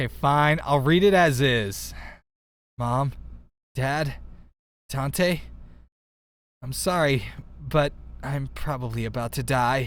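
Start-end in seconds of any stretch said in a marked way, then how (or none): 2.8-9.9 put-on resigned calm, not afraid. Reading aloud their own earlier message to family, retelling calm resignation. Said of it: "I didn't sound like I was afraid. Just completely resigned".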